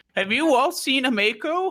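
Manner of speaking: put-on very high elderly grandmother voice. Retrying a character's question to the group, old granny voice.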